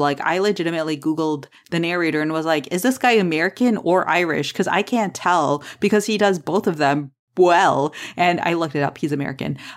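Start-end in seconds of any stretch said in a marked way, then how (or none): none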